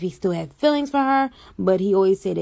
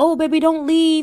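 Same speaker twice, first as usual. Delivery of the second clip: mock pleading, high-pitched begging voice; 7 semitones higher, 4 dB louder than usual. Retelling a boyfriend asking her not to leave: imitating someone begging. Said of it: "You was just begging me not to leave".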